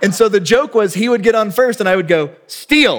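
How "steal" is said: mock brief, terse called-out signal. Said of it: "like that".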